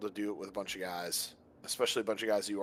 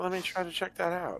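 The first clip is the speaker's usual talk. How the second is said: very high-pitched voice-assistant tone; 10 semitones higher than usual. Imitating the smart speaker that offered to help: Alexa voice.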